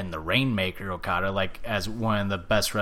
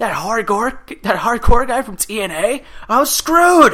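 acted freakout, very high, loud, slow, drawn-out; 12 dB louder than usual. Retelling a wrestler seeing who his opponent is, retelling someone freaking out. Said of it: "freaking out".

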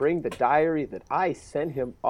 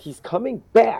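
put-on whiny, foot-stomping child voice, pitched up; 8 semitones higher, 6 dB louder than usual. Retelling how a son in a movie says a line: imitating a whiny, stompy kid. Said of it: "he's almost like a whiny, stompy kid".

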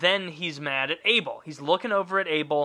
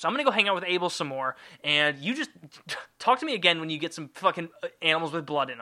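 usual speaking voice

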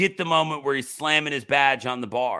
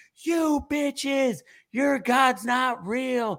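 put-on frantic screaming, higher pitched; 12 semitones higher than usual. Retelling a cut movie scene, imitating Nick Cage screaming. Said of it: "he's screaming".

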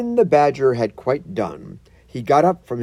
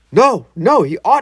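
loud shouting, words muffled by a full mouth; 7 semitones higher, 5 dB louder than usual. Reading a story aloud, the mole's line, shouting with his mouth full. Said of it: "with his mouth full".

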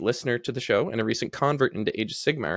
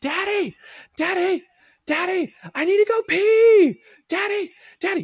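put-on shrill, very high, loud toddler screaming; 7 dB louder than usual. Retelling how the offspring wakes at dawn: imitating a child screaming. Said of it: "wakes up every day screaming".

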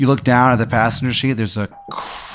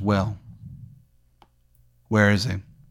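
threatening male voice, lower and quieter; 3 semitones lower, 6 dB quieter than usual. Voicing the man in the back seat demanding an answer: menacing man in the back seat. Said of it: "It's very menacing".

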